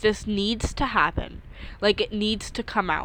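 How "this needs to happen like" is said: ordinary delivery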